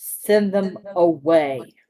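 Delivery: incantation-like magic voice. A game character using a magic spell to speak, booming voice. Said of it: "use thaumaturgy and booming voice and say".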